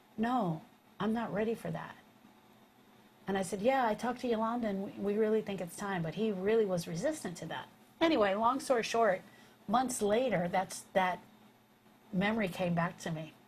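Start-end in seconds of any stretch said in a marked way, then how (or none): 0.2-2.0 put-on saddest, lowest voice. Retelling how he answered when told about hospice, imitating a sad low voice. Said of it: "in the saddest voice and in the lowest voice".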